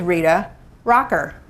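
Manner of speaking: break after first name, then punch on next word. Introducing yourself to a group: pause before Rocker, stress Rocker. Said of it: "I pause between my first and last name, put a little bit more punch on the last name".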